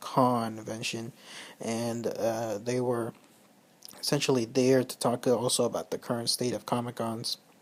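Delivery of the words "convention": strong stress on first syllable con of convention. Explaining the name of a fan group, stress on con. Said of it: "emphasize the first three letters".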